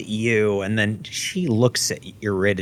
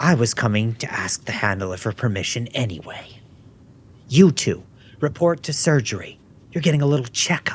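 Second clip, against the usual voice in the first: furious, scornful, mocking officer voice. A major confronts two pilots she caught off base: livid, not gentle. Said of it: "The major is the major is not being gentle about this. / She looks livid. / The major is the major is not being gentle about this".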